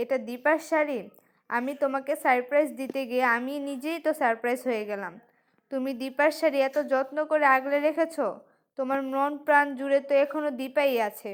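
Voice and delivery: ordinary delivery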